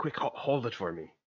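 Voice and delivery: soft, hushed whisper. Storyteller voices a character speaking to the listener, whispering. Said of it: "she just kind of whispers to you".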